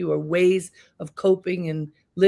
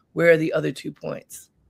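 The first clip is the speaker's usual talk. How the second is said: very stern, serious and demanding tone; 2 semitones lower than usual. Retelling what a father said about a test score: imitating someone speaking sternly. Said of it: "my father says very sternly".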